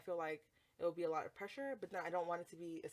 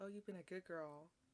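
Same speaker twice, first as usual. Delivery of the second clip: close, soft, hushed stage whisper; 7 dB quieter than usual. Recounting what a man half-whispered to her during sex, imitating his half-whisper. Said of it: "he like whispers".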